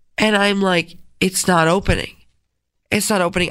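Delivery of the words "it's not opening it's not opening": ordinary talk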